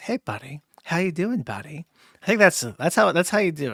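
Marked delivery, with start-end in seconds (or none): 0.0-1.9 slick, sleazy, sing-song, over-the-top friendly tone. Imitating how someone used to talk: sleazy over-the-top nice voice. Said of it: "that kind of like sleazy, nice, like super over the top, nice".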